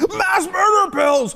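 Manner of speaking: put-on ranting voice. Retelling a reaction to a clip: Alex Jones impression. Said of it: "that's Alex Jones".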